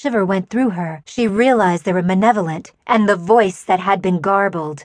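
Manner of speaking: ordinary delivery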